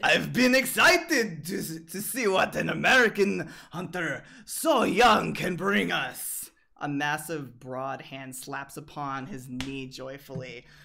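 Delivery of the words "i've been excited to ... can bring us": put-on very loud, booming, boisterous, hearty Russian accent. Voicing a figure on a couch greeting a young hunter: boisterous Russian voice. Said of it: "A boisterous Russian voice".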